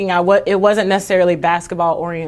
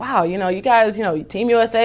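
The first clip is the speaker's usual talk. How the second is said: ordinary talk, nothing marked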